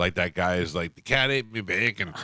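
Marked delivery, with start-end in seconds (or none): 0.9-2.1 put-on high-pitched, boozy Australian accent. Imitating how Australians sound when drunk: imitating high-pitched drunk Australian. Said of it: "They get that high pitch".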